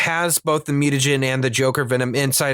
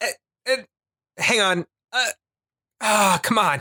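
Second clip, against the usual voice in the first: acted effortful grunting and heaving noises, straining; 7 semitones higher than usual. Retelling a character straining to reach others out of reach: imitating a straining character's noises. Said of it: "It's funny 'cause she's like".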